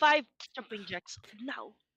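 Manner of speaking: put-on stern, strict voice in a Russian accent. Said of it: "You sound like a stern Russian gym teacher".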